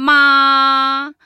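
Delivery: ma held high and level. Introducing the four Chinese tones, first tone example: high level tone on Ma. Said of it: "Premier ton".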